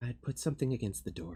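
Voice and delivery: soft, confiding, leaning-in half-whisper. Renting out three rooms, the character leans in and gives advice, half-whispering. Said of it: "Kind of whispers to you".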